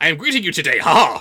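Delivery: very loud, weird, stilted dub English. Mocking how an anime dub renders a street greeting, weird, stilted English dub voice. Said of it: "sound that weird and stilted".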